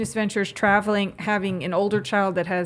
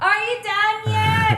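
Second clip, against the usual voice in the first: put-on child's scream, very high and very slow; 14 semitones higher, 3 dB louder than usual. Imitating a daughter who screams through the bathroom door: imitating a child screaming. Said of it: "screams at me".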